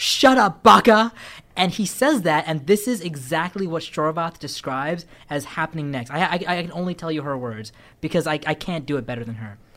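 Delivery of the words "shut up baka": very loud, all-caps shout. Retelling a story's dialogue spoken in all caps: imitating Pocky-san shouting. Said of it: "all Pocky-san's dialogue's in all caps".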